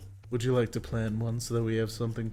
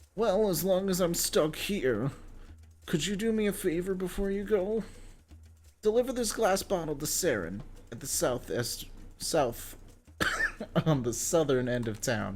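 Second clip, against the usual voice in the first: high-pitched, whiny, sing-song character voice; 7 semitones higher than usual. Performing a character's dialogue in a whiny character voice. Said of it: "he started whining, so I knew that that was the correct voice".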